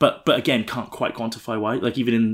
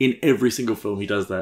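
ordinary talk

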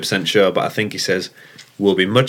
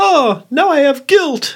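very high cartoon character voice, up to a squeak; 4 dB louder than usual. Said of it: "You actually did Rex's voice".

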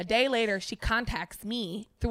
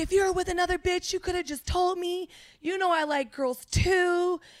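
high, shrieking, screaming yelling rant; 8 semitones higher than usual. Retelling what a woman screamed in the hallway: imitating someone screaming. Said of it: "screaming, yelling".

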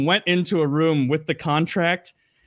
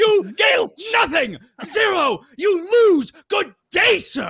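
very high, slow, swooping yell; 3 dB louder than usual. Retelling someone yelling at contestants: imitating Willy Wonka yelling. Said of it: "yelling at them to come out".

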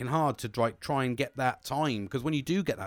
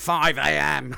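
loud, put-on Scottish accent; 3 semitones higher, 8 dB louder than usual. Retelling what his dad said the morning after drinking, imitating dad's Scottish accent. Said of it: "in his Scottish accent".

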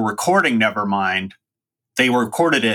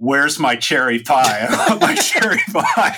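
mock screaming, higher pitched; 3 semitones higher than usual. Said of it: "started screaming".

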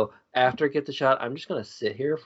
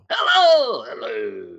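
starts very high, then swoops down; 11 semitones higher, 5 dB louder than usual. Coaching someone on an impression, the speaker demonstrates a voice going high then low. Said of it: "you gotta go high and then low".

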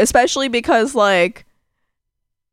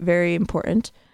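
usual speaking voice

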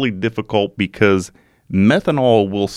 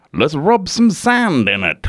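terrible fake Australian accent, pitched up; 6 semitones higher than usual. Quoting a man who smashed his head on a tree: terrible put-on australian accent. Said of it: "My Australian accent's fucking terrible".

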